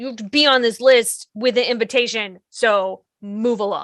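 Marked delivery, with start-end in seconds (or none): none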